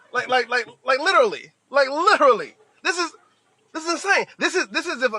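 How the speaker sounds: stammering, tripping over phrases, words repeating, disbelieving. Speaker reacting to news about laid-off employees: stuttering in disbelief. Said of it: "if I'm stuttering".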